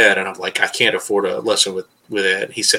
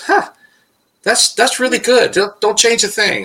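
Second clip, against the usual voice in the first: put-on nonchalant tone, much higher pitch; 13 semitones higher than usual. Recounting a masterful brush player's reaction to his brush work, retelling a shrugging reply. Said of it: "he just kind of shrugs and kind of goes".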